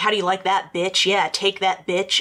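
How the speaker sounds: ordinary talk, nothing marked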